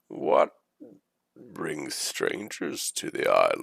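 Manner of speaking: put-on croaky, rough, frog-in-throat bird-folk creature accent. Narrator voicing a bird-folk figure to the arriving group: croaky accented bird-folk voice. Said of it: "with a frog in his throat, he speaks in sort of accented bird folk".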